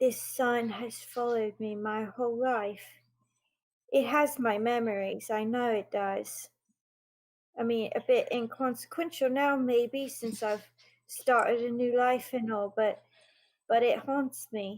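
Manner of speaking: stage whisper, loud. A character looks up at a sign and speaks in a loud whisper. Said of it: "in like that loud whisper says".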